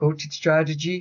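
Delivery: put-on Dutch accent, not accurate. Filling time while waiting for a reply, imitating Striker with a fake Dutch accent. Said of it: "I'm going to put a Dutch accent on".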